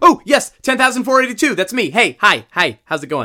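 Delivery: shouting at full volume. A customer answers the rental clerk calling his number, screaming at the top of his lungs. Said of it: "stop screaming at the top of your lungs".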